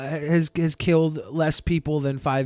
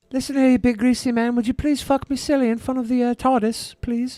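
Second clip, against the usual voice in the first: pitched-up woman's voice; 7 semitones higher than usual. Reacting to a video, imitating the woman in the video. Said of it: "Spot on".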